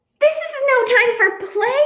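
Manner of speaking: very high-pitched, excited, swooping yell. In a storybook read aloud, Duck answers the little bluebird: yelling. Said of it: "yelled Duck".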